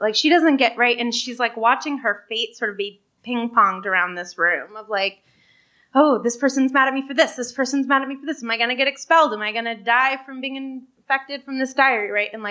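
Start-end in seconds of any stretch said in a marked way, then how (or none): 6.0-12.1 put-on anxious, spiralling, mounting and helpless panic. Voicing a girl's thoughts as adults decide her fate: acting out mounting panic. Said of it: "her mounting panic and just helplessness".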